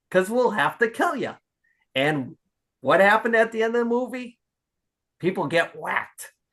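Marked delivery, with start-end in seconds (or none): 0.1-1.3 lightly joking delivery. Retelling a movie line, imitating De Niro saying it jokingly. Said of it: "But the way he said it, jokingly".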